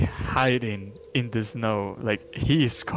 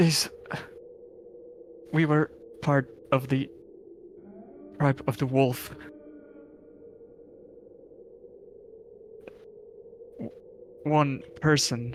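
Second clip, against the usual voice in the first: pitched-up voice breaking, fighting back tears; 5 semitones higher than usual. A survivor, asked what happened, starts answering: cracking voice, holding back tears. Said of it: "starts speaking with a cracking voice, still trying to hold back tears".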